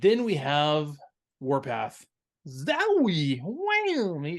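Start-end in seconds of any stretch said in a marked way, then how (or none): 2.5-4.2 put-on crazy-sounding robot voice, higher pitch. Retelling a cartoon battle scene, Warpath talking like a crazy person. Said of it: "he's just talking like a crazy person".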